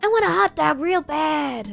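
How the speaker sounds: rough, high, slow, creaky drawl, poorly put-on. Doing a quick impression after naming the actress: Jennifer Coolidge impression. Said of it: "always does Jennifer Coolidge".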